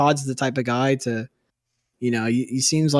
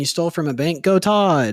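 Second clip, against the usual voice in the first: usual speaking voice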